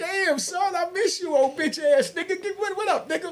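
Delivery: very high, delighted, happy voice. Retelling greeting a friend after a long time: retelling a happy greeting. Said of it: "I'm all happy to see my man".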